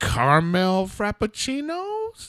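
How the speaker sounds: uncertain, swooping high voice. Retelling a mover's coffee order: imitating Angel asking questioningly.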